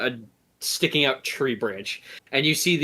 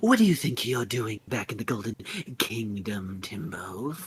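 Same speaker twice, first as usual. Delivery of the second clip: serpent-woman character voice; 2 semitones lower, 4 dB quieter than usual. Voicing a snake woman holding a dagger to a throat: snake woman voice. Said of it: "Just like".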